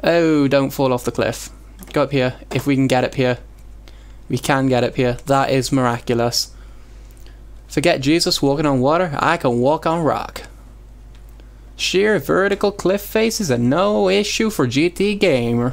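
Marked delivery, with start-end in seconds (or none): 7.7-15.7 put-on hillbilly voice. A gamer commentating on his own gameplay, in a hillbilly voice. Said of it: "a hillbilly voice today".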